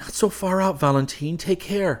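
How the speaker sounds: gasped out, very high pitch. Clinging to the sill of the thundering train, he warns Valentine, gasping. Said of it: "he gasped".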